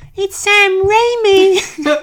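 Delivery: very high-pitched, loud put-on announcing voice. Retelling how a friend announced the director: Rory voice. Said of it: "I'll try and do a little Rory voice".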